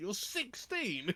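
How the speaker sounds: very high, acted, truly affronted incredulity. Retelling a man's reaction to learning someone was sixteen: retelling offended disbelief. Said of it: "actually offended".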